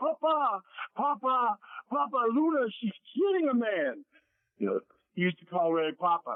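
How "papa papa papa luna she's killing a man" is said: mock screaming, very high and long drawn-out. Telling a story, the speaker acts out someone bursting in and screaming to Ray. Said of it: "he starts screaming to Ray".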